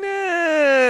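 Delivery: mock dismissive, mocking tone.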